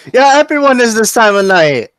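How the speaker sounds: put-on loud, high, drunken hollering. Narrating a night in the dock ward, voicing a passing man, drunk man yelling. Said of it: "He's clearly very drunk".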